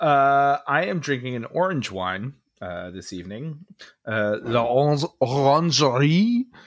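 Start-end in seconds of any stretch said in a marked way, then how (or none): 4.1-6.4 put-on French accent. Naming the orange wine being drunk this evening, in a French accent. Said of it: "That's my amazing French accent".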